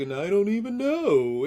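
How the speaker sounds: high, loud cartoon-lion voice.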